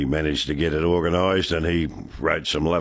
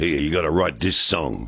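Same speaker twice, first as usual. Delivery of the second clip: put-on speaking in a New York accent. Retelling his songwriting collaborator George Mann telling him what to do, in New York accent. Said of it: "with his New York accent".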